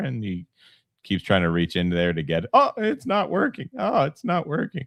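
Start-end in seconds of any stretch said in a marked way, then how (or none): 2.5-4.9 put-on very high, squeaky, pimply teenager voice. Retelling a scene from The Simpsons: voice of the pimply Simpsons teen. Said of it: "the pimply kid from The Simpsons ... he's like".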